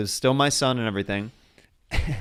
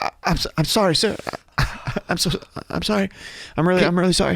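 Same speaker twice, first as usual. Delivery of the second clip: mock weepy, high, tearful, stammering, stumbling speech; 7 semitones higher than usual. Retelling an apology after being slapped in a dream: imitating own crying. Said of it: "I started crying in the dream".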